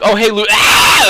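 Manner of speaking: put-on kid screaming, high-pitched and loud.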